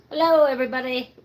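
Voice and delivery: loud, puppy-like dog voice. Showing the puppy dog to viewers, speaking as her puppy dog. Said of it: "She says".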